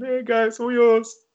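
put-on shouting, very high. Retelling how he shouted to the guys after walking off, retelling a shout. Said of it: "just shouted".

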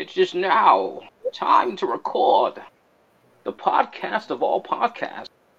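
weird, high, slow, wide-swinging German villain voice.

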